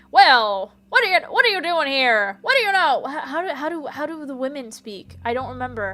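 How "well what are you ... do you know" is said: mid-Atlantic accent, said loudly. Showing what the Atlantic accent sounds like: Jimmy Stewart voice. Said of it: "like Jimmy Stewart".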